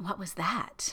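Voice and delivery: roughened voice. Narrator reading Tyler asking Jamie a question after a kiss, rough voice. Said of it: "his voice rough".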